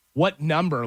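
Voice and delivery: mock mean, curt, snappy tone. Retelling an airport line agent's question, imitating a mean, curt question. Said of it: "Like that, like, really, really".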